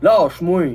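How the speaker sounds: deep, low voice with big heavy vowels. Showing a voice with big low vowels: deep voice with big low vowels. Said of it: "Avec des, des belles voyelles basses bien grosses".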